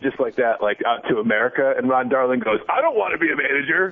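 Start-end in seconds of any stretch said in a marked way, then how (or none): 2.7-3.9 put-on, pitched-up, defensive voice. Retelling a man's reply to a throwaway line, as if accused of lobbying, imitating someone all defensive. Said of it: "Like he was all defensive about it".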